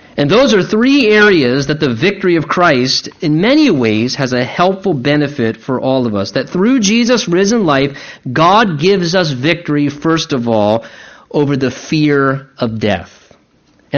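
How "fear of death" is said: "fear of death" stressed slowly. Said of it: "I emphasize the word fear of death".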